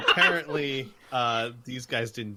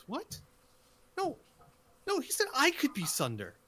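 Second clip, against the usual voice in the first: very high-pitched, swooping female voice; 13 semitones higher, 4 dB quieter than usual. Storyteller voicing a second figure arguing over who gets to be sunder, female voice. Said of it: "you hear like a female voice".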